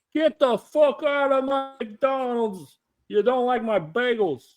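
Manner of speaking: put-on very high-pitched old man voice.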